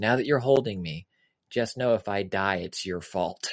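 whispering. Retelling what a scared daughter said, holding onto a parent: imitating a whisper. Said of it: "leans into me and whispers".

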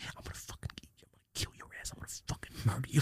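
play-acted furious threats, whispered under the breath. Retelling sitting beside the other kid while security is called, retelling angry threats. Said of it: "I was so mad".

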